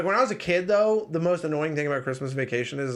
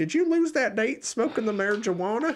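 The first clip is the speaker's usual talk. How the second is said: put-on high old woman voice; 7 semitones higher than usual.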